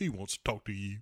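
self-satisfied smug aside, low and soft. Retelling a scene, a man hands the phone back to another man: retelling a smug remark. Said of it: "kind of smugly".

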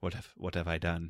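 put-on hushed, soft-spoken British accent. Acting out a movie line with a dramatic pause: Affleck British accent. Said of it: "That's some solid Affleck British accent there".

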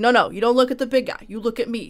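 put-on New York, Brooklyn, Jersey street accent. Demonstrating the talkative character's voice, in a New York, Jersey, Brooklyn accent. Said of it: "New York, Jersey, Brooklyn kind of accent".

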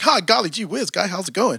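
put-on, stock, cheery American accent. Joking that this isn't how they speak: put-on american accent. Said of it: "I'm not necessarily speaking with an American accent".

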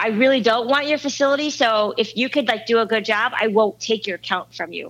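ordinary talk, nothing marked

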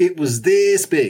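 goofy, silly put-on funny voice. Trading puns with others, the speaker delivers a joke line in a funny voice. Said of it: "I said it in a funny voice".

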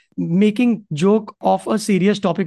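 ordinary talk

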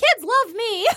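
squeaky, very high-pitched voice. Mimicking a big guy whose voice got messed up, in a Mickey Mouse voice. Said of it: "So he sounded like Mickey Mouse".

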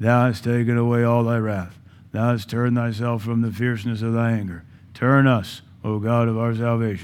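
low, flat, lifeless liturgical-style monotone drone. Showing how the text sounds when read like a dead liturgy. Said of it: "if you're going to read it like a dead liturgy".

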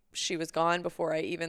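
ordinary talk, nothing marked

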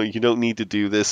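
ordinary talk

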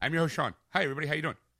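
rattled-off host delivery. Host introducing himself to the audience at the show's start, talking fast. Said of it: "That was fast".

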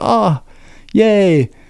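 put-on high, thrilled and delighted little child's cheer. Retelling how the kid reacts to his new room: imitating an excited kid. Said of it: "he's all excited".

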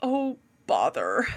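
low, worried, fretful whine. Describing how an audiobook voices a character, imitating Pooh Bear's worried whine. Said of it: "constantly worried and just constantly kind of whining".

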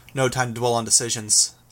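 ordinary delivery

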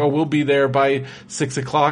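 ordinary talk, nothing marked

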